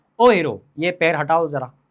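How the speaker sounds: sweet, gentle, loving, affectionate tone. Someone in a crowd steps on your foot; first time you ask lovingly. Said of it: "ऐसे उसको प्यार से बोलोगे".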